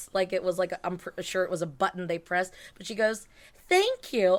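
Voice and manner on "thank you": high, pitched-up video-game princess character voice. Retelling what Peach said when meeting her: Princess Peach voice. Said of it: "in an actual Peach voice".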